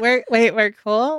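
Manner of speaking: ordinary talk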